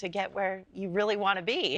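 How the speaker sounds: ordinary delivery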